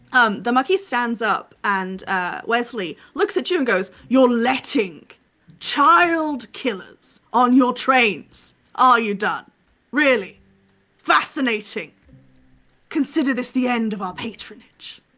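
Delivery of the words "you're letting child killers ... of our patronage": furious, angry tone, higher pitch. Voicing a noble leaving the train in anger: angry storming out. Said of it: "he storms out with his wife".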